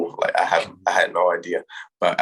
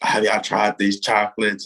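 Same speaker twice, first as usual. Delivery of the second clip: mild call-out, or a loud yell; 3 semitones higher than usual. Retelling a coach running into a meeting with chocolates: imitating Coach Drew yelling. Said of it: "he just yelled".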